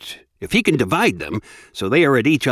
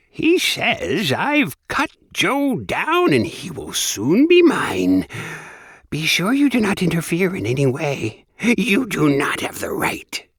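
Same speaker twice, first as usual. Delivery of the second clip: high, rasping little imp voice calling out; 6 semitones higher than usual. Reading a story aloud, the narrator voices a little imp delivering a message: high, raspy imp voice. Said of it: "calling out its message in a high, raspy voice".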